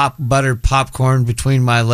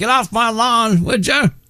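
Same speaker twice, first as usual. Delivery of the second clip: put-on old man voice, much higher pitch; 11 semitones higher than usual. Moviegoer talking about seeing a fashion movie, putting on an old man voice. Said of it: "I'm going to sound like a really old man".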